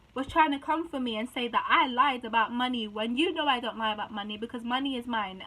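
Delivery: ordinary talk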